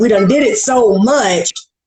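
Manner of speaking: ordinary talk, nothing marked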